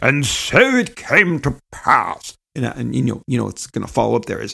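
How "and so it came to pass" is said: very slow epic narration, every word stretched out prophetically. Trying the same line again: Gandalf voice. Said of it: "maybe I'm doing that in my Gandalf".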